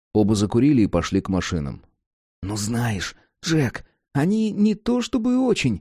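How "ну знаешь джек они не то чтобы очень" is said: guilty whisper, much higher pitch, slower. A cat answers the raven as they walk to the cars, guilty whisper. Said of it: "виновато зашептал кот".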